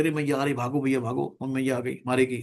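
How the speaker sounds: ordinary delivery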